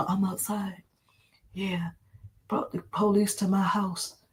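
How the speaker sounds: very hushed whisper. Retelling what someone said on camera: imitating someone whispering. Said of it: "he was whispering in the phone".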